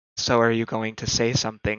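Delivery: hushed half-whisper under the breath. In an acted scene, he prompts someone put on the spot to speak, smirking half-whisper. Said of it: "He whispers with a smirk under his breath".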